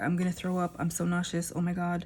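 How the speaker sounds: plain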